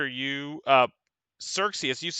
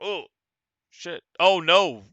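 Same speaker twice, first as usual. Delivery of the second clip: put-on dismayed, stunned monster voice, higher; 4 semitones higher than usual. Voicing the creature as if stunned by the player's strike: creature acting stunned. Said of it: "The creature goes like".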